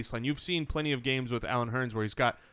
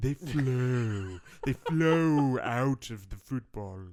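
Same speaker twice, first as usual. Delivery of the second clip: very slow monster voice, each sound stretched out. Repeating a remark about the points for another speaker, Frankenstein voice. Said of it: "that was like a Frankenstein".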